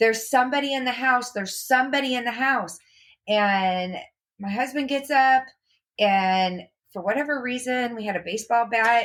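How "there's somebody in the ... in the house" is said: re-enacted screaming. Retelling the night somebody was in the house, re-enacting her own screaming. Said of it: "And I'm screaming".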